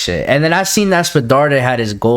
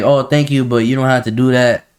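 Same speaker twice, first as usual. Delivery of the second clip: mock depressed, upset tone. Retelling a guy's reply after being given more subs, imitating a depressed voice. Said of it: "a depressed type voice".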